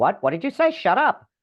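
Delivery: play-acted big booming voice, very high and loud. Retelling an inner dialogue, the speaker gives the big loud voice. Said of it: "the big loud voice said".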